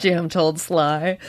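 ordinary delivery, nothing marked

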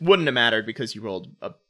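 usual speaking voice

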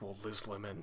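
poorly attempted voice, said softly. Quoting a character from Thirty Rock: bad Alec Baldwin impression. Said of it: "I can't do an Alec Baldwin impression".

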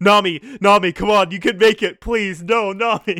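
mock, frantic, very loud, high-pitched desperate pleading. Retelling a scene where Luffy shakes a skeleton: imitating Luffy pleading desperately. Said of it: "he's, like, shaking. He's like".

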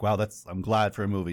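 plain

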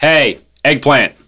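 loud yelling. Calling over to a companion in character, sending him after dogs: yelling over to someone. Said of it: "I'm gonna yell over at him and say".

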